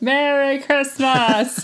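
loud, level, haunted-house animatronic robot voice. Retelling a character popping up at the parade finale: imitating a haunted-house robot. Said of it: "She pops up like a robot in a haunted house ride".

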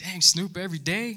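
acted amused, half-laughing reaction. Retelling a reaction to a line on a show: retelling own laughing reaction. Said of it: "I'm kinda laughing like".

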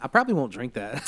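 ordinary delivery

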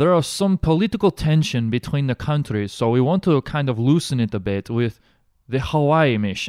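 rough, clumsy put-on Eastern European accent, slipping. Speaker voices a man's interpreted quote, in a Borat-style accent. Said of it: "you kind of shifted from Borat into Bruno a little bit".

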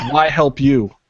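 fake broken English, slowed down. Retelling a story, narrator voices Sexy's reply to Dario in half-broken English. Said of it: "in her half-broken English".

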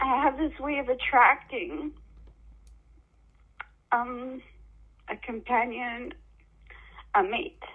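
crying, tearful voice, talking through tears. Speaker talking to a listener who urges them to keep going, crying. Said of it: "I wish I would stop crying".

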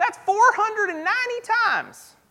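strong Southern cartoon accent, high. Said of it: "in a really awesome Southern voice".

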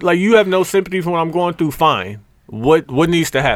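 mock blunt, impolite tone. Retelling an argument with a woman on the phone: retelling an impolite, curt tone.

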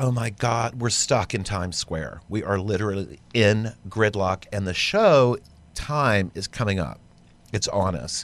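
ordinary delivery

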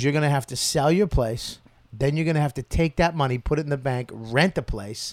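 usual speaking voice

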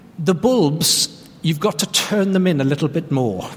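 put-on broad Irish accent. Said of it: "in a really broad Irish accent, which I'll try and do".

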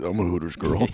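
acted young woman voice. Joking about a hooters girl costume: put-on hooters girl voice. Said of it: "In that voice".

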